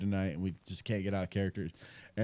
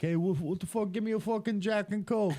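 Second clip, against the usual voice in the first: put-on Boston mobster accent, very high pitched; 12 semitones higher than usual. Retelling ordering a drink at the bar while in character: put-on boston mafia accent. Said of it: "that Boston accent or, like, these mafia movies".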